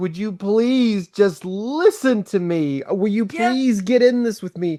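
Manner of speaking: pleading, begging tone. Acting out Job begging his friend to listen: imitating someone begging. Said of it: "he's begging his friend".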